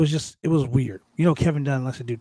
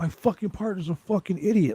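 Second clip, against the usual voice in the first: angry ranting, higher pitch; 5 semitones higher than usual. Retelling a wrestling match, imitating Randy going off about his partner. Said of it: "he really was going off".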